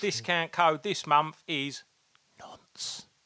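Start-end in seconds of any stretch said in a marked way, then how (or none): 2.4-3.0 sudden, hushed whisper, barely audible. Giving out this month's discount code: whispered 'nonce'. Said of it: "Why did you whisper it?".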